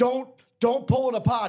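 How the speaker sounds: firm, stern voice. Retelling Nate scolding the speaker's nephew Will, imitating Nate talking sternly. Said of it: "not yelling, but talking sternly".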